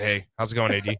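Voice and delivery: mock flat, low, monotone, relaxed, laid-back delivery. Acting out how a greeting was really said, monotone and relaxed. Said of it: "much more monotone and relaxed".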